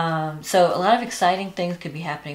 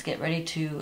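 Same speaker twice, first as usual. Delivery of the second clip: ordinary talk, nothing marked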